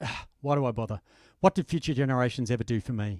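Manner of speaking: put-on muttering under the breath. Retelling what an economics lecturer said: imitating someone muttering under his breath. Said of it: "muttered under his breath".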